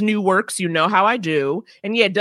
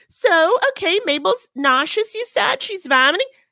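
put-on very high baby voice; 10 semitones higher than usual. Retelling what an unfamiliar vet said about the sick pet, in a baby voice. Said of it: "Got a baby voice".

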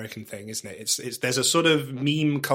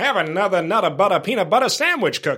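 put-on American accent, pitched up, raised, loud; 7 semitones higher, 7 dB louder than usual. Repeating an old advert slogan the way the adverts said it: american accent. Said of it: "they'd say it in an American way".

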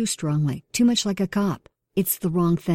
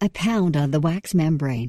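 plain

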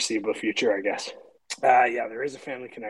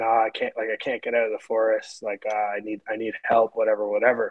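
normal talking voice

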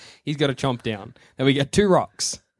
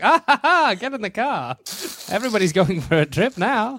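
put-on high, old-timey folksy voice; 6 semitones higher than usual. Acting out old-timey townsfolk for friends, in an old-timey folksy voice. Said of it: "that is the best voice you've ever done".

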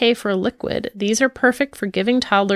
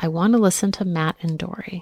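quiet, soft, much lower voice; 2 semitones lower than usual. Parent retelling their three-year-old's request from her car seat, quietly. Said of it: "quietly said from her car seat".

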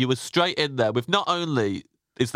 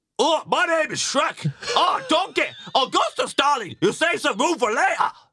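very high-pitched ogre voice. Speaker warms up with stock Shrek phrases before the requested line, Shrek voice. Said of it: "but as Shrek".

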